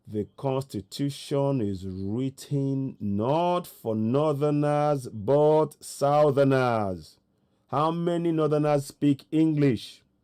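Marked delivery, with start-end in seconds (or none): 0.1-7.1 slow, deliberate, drawn-out, word-by-word delivery. Repeating a statement to the audience for emphasis: said slowly. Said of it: "I'll say that again slowly".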